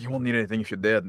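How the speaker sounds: ordinary delivery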